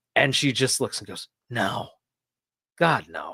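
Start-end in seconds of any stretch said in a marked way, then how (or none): 1.5-3.4 mock withering, disdainful, dismissive scorn on "no". Retelling a teacher's answer to a wrong guess: imitating a teacher's disdainful reply. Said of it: "what I can only describe as disdain".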